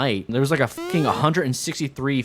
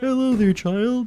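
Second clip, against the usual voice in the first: very high, froggy, puppet-like put-on cartoon voice; 10 semitones higher than usual. Trying a cartoon voice as Homer Simpson, heard as Kermit. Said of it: "that's Kermit".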